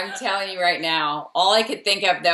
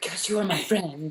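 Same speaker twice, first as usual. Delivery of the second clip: put-on French-accented girl voice, quieter; 6 dB quieter than usual. Quoting a girl from a movie saying a line: French accent. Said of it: "in her French accent".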